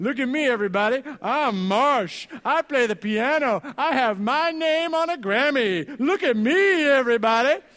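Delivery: mock goofy, boastful show-off voice, loud and high. Retelling how someone did goofy imitations: goofy imitation of marsh. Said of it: "Here's my impression of Marsh".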